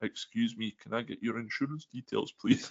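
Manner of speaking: timid, sheepish, hushed soft voice. Retelling a car accident, the speaker quotes the other driver: mock-sheepish request. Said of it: "in the most sheepish manner possible".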